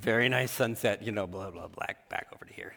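put-on reluctant, grudging, dismissive tone. Retelling how the kids come over to view the sunset: imitating begrudging kids. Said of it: "begrudgingly come over".

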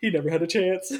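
tearful aside while weeping. Retelling a mourning scene, muttering a line: imitating Kronk muttering under his breath. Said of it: "under his breath, he literally goes".

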